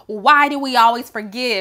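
plain

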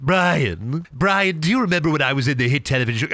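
bad put-on fake British cartoon voice. After someone says a word oddly, the speaker addresses Brian: Stewie Griffin voice. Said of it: "saying it like Stewie Griffin".

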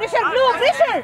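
yelling, cheering, enthusiastic.

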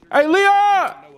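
screaming. Calling out to a brother while held in custody: screaming. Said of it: "Why are you screaming?".

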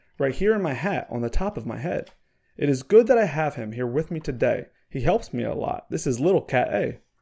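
ordinary delivery

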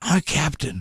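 whispering. Retelling what a man whispered, quoting him in a whisper. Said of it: "And he whispers".

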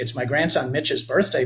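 plain reading voice

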